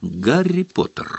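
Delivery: high, piercing exclaimed voice. A small visitor in an old pillowcase greets Harry, in a shrill voice. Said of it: "пронзительным голосом воскликнул".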